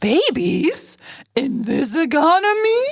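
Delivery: put-on very high, sing-song, cooing baby talk. Echoing a line someone just repeated, in a baby-talk voice. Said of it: "Sounded like you were talking to a baby with that voice there".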